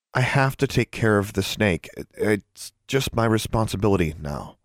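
usual speaking voice

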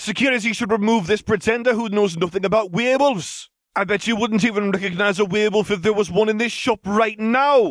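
very high, shrill shouting. The one-hand man in a shop, arguing with a pretender: shouted. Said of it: "shouted the one-hand man".

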